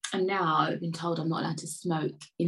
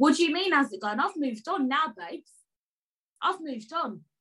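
very high-pitched, shrill shouting; 10 semitones higher than usual. Ranting about someone who only gets in touch on Friday: shouting. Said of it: "Why am I shouting?".

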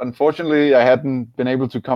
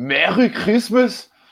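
fake Danish accent laid on thick, sing-song; 5 semitones higher than usual. Asked on the show to do it, a thick Danish accent in English. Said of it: "Thick Danish in English".

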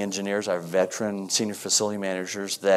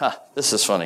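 plain

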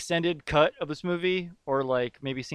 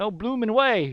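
high, loud, belted fake Australian accent. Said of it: "So he's like".

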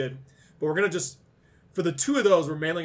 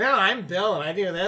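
whiny mocking voice; 4 semitones higher than usual. Retelling how someone mimics the speaker: imitating a mocking whiny voice. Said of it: "She makes me sound like a whiny bitch".

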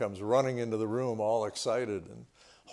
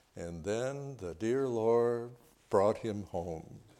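mock devout, very pious, holier-than-thou tone; 3 dB quieter than usual. Retelling how a boy held up a rat to his mother, in a mock-pious voice. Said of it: "said in a very pious voice".

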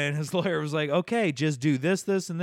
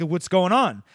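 put-on aggressive tone, louder; 3 semitones higher, 5 dB louder than usual. Retelling what a sheriff's deputy said to a buddy: imitating an aggressive tone. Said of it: "getting really kind of an aggressive tone of voice".

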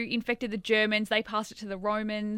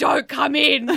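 put-on panic, high, loud, urgent blurt; 5 semitones higher, 8 dB louder than usual. Retelling how Nicholas rang in a panic: imitating Nicholas panicking. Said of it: "Nicholas rings me in a panic".

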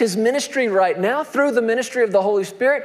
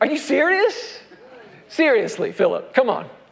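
voice full of frustration, exasperated; 2 semitones higher than usual. Retelling Jesus answering Philip's request to see the Father: imitating frustrated Jesus. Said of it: "you can nearly hear the frustration in Jesus' voice".

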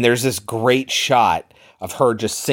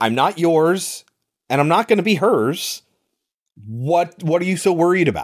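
acted, furious, high-pitched angry shout; 7 semitones higher than usual. Recounting a story where he shouts in the middle of class, retelling a shout. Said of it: "he shouts it in the middle of class".

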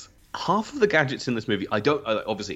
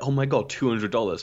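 ordinary talk

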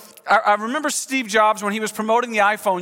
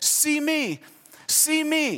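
put-on high, soft, very slow, drawn-out toddler voice; 6 semitones higher, 5 dB quieter than usual. Parent recalling a two-year-old daughter at the camcorder, in Kennedy's little high-pitched voice. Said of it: "in her little high-pitched voice as a two-year-old".

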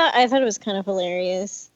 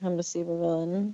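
put-on nonchalant delivery, quieter; 9 dB quieter than usual. Imitating Elliot saying he is a supervillain, not even trying: imitating Elliot, nonchalant. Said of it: "He's so, like, nonchalant about it".

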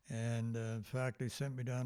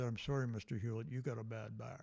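mock sarcastic delivery. Retelling what a lawyer said after dropping her pen: imitating a sarcastic remark. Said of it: "very sarcastically".

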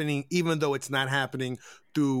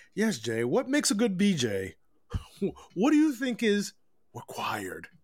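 fine, refined put-on voice, high and swooping; 5 semitones higher than usual. Asking jay the next discussion question, in a fine, refined voice. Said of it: "In my fine, refined voice".

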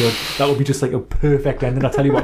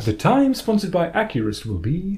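pitched-up recorded time-announcement announcer voice; 5 semitones higher than usual. Chatting with the other speaker, speaking clock announcer impression. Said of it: "That's quite a good impersonation of him".

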